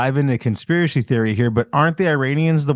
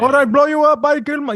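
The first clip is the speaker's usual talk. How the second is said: very high-pitched put-on Indian accent; 12 semitones higher than usual. Imitating the man being described: imitating an Indian accent. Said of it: "he talks like he's from some New Delhi call center".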